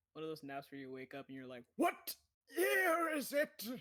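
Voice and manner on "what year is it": put-on very high, very slow, loud old man voice. Describing waking from a disorienting nap, the speaker voices the thought in old man voice. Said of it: "flexing the old man voice".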